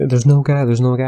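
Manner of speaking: mock tearful pleading, high, broken by sobs. Retelling a couple's argument outside a Denny's, the wife's reply: imitating a wife sobbing. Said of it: "The wife starts sobbing and".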